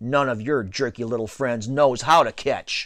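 usual speaking voice

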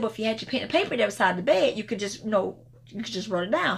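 normal talking voice

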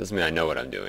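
MEAN stressed with a falling tune.

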